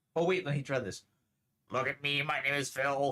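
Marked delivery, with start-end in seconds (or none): 1.7-3.1 teasing, mocking put-on character voice. Trying out a new voice box by imitating Phil's voice. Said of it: "It sounds a lot like Phil".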